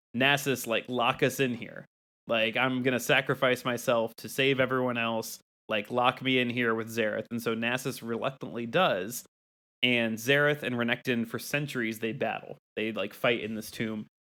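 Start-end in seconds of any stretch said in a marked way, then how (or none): none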